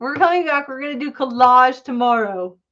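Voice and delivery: loud yell. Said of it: "I don't know why I'm yelling at you".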